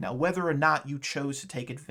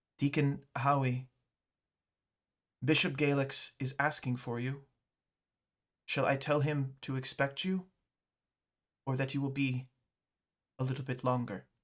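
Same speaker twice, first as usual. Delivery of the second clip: expressionless, empty, blank monotone with flat pitch. Narrator voices a character telling Deacon Howie the bishop wants him; monotone, blank voice. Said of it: "very monotone, very blank kind of voice".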